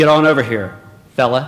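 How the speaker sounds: put-on stern, firm, no-nonsense voice. Retelling a father calling a child over: imitating a father meaning business. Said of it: "you knew he meant business".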